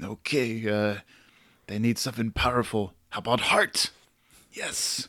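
put-on French accent. Imagining a Japanese person naming a football team: put-on French accent. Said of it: "I gave a Japanese person a French accent".

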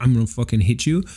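normal talking voice

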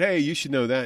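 normal talking voice

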